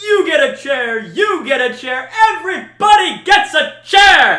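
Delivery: very high, very loud, slow, drawn-out booming announcer voice. Doing an Oprah bit, in an announcer voice. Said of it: "I just went for a just an announcer voice".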